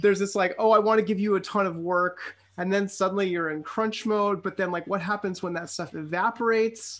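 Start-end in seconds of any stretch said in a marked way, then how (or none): none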